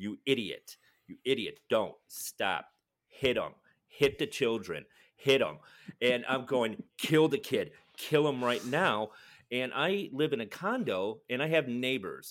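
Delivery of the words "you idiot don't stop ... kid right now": put-on maniac-like shouting. Retelling watching a film at home, acting out maniac-like shouting. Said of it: "pacing back and forth going".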